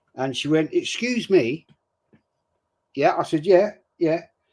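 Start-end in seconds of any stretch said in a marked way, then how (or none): 0.7-1.7 refined, proper, posh English lady voice. Retelling a woman with her children approaching him about swearing, imitating a well-spoken lady. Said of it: "very well spoken lady".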